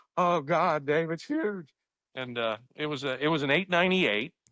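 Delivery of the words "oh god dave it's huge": put-on, shaky, thrilled voice, drawn out. Retelling how a fishing partner reacted to a big catch: imitating a shaky excited voice. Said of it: "He got all shaky".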